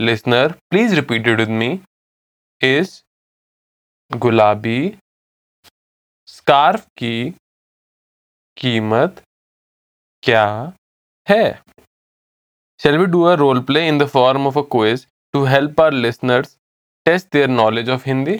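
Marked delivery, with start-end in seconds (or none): 2.6-11.6 very slow, broken into pieces, halting repetition. Speaker repeats a Hindi sentence for listeners to repeat; said again slowly. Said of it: "I'll say it again slowly".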